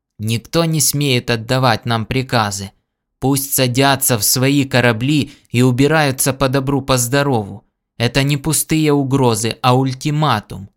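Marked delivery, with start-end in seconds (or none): none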